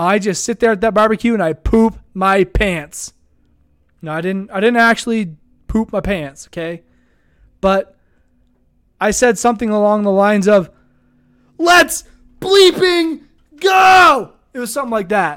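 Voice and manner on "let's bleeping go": mock, very high-pitched, loud yell. Retelling his reaction to big team news at a barbecue: imitating his own yell. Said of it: "I yelled it out loud multiple times".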